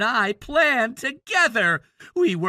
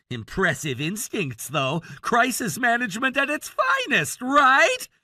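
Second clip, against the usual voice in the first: mocking, sarcastic, sing-song tone; 3 semitones higher than usual. Taunting a father in a quarrel after a wedding: sarcastic. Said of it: "I'm not here for your sarcasm".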